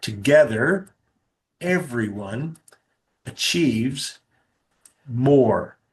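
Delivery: slow, deliberate, measured, purposeful delivery. Spelling out an acronym the speaker uses, said really slowly on purpose. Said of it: "I said that really slow purposefully".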